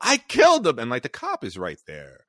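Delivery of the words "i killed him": very loud, high-pitched, full-throated shout. Retelling a scene where one character confronts another: imitating someone shouting. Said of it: "he's shouting at him".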